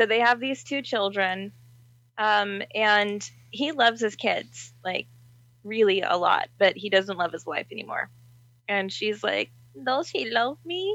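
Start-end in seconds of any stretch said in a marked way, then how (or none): 9.8-11.0 cartoon sitcom housemaid character voice. Retelling a story, quoting the wife: Family Guy maid voice. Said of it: "Why did she just become the maid from Family Guy?".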